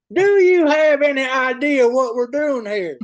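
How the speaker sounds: very loud, slow, bellowed bad Southern accent. Praising a doctor's Southern accent, then imitating it: bad Travis Taylor Southern accent. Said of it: "that's a horrible doctor Taylor impression".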